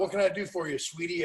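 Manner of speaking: plain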